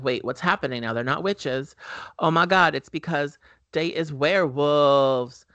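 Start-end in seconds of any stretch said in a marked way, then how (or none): none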